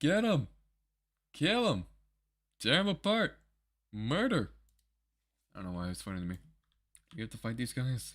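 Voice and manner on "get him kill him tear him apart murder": high-pitched, drawn-out, barked commanding voice. Laughing at how a game character said a line, imitating his delivery. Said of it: "The way he said that, he's like".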